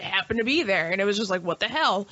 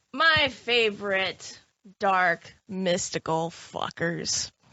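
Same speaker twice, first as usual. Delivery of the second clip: very heavy sarcasm. Introducing the topic of shadow people to the others: very sarcastic. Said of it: "I'm being very sarcastic".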